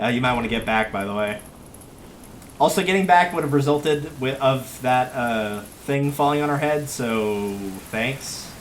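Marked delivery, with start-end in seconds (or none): 0.0-1.4 really casual, offhand, low-key delivery. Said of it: "I like to imagine that she just says it really casually".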